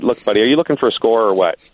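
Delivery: imitated annoyed, irritated tone. Retelling a reply to a phone caller, imitating own annoyed tone. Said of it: "a pissy mood".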